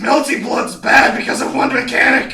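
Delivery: high, grumbling, complaining tone.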